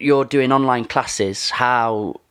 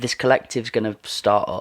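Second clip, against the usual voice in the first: ordinary delivery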